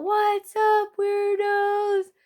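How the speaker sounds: put-on very high, high-pitched yell. Retell how he called out in the middle of nowhere, imitating someone yelling out. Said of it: "He like yells out".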